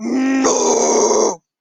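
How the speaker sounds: very loud, roaring troll bellow. Copying a game troll's cry from the game audio: imitating the troll's "no!". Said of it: "That was actually a really good impression".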